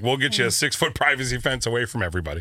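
plain

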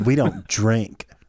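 put-on snarky voice. Imitating a diner's comment to a server: imitating a snarky customer. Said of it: "as snarky as you could possibly imagine".

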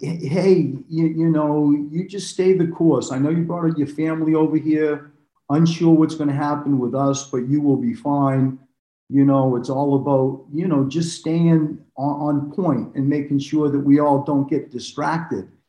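plain

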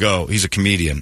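plain

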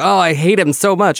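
put-on angry scream. Retelling a Seinfeld scene about Melrose Place: imitating Jerry screaming. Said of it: "he starts screaming about Jane and Michael".

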